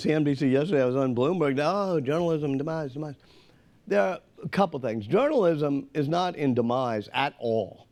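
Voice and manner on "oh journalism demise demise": mocking worried lament, put-on fretting. Guest mocks how tv hosts wanted a lament about journalism; mock hand-wringing. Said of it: "they were trying to get me to hand ring".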